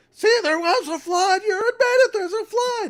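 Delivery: very loud, very high, shrill shrieking scream. Retelling an opponent's reply in a debate: imitating someone screaming. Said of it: "And he started screaming at me".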